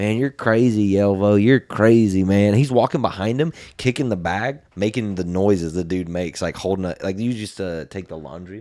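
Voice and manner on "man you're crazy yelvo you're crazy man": loud, slow, over-the-top crazy southern drawl. Retelling a man who got mocked behind his back, the speaker does his crazy southern accent. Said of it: "he had like a crazy southern accent".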